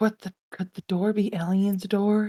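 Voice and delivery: hushed half-whisper, barely audible. Voicing Owen wondering about a door: half-whispering very quietly. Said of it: "whisper very, as quietly as Owen can".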